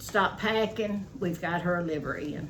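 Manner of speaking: usual speaking voice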